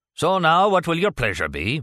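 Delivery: gruff, swooping voice with distinct Irish lilt. A barman calls to a customer at a makeshift bar, gruff voice with Irish lilt. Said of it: "a distinct Irish lilt to his gruff voice".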